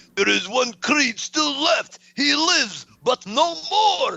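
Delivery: put-on high, horrible Russian accent. Retelling a movie scene line: horrible Ivan Drago accent. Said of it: "that's a horrible Ivan Drago accent".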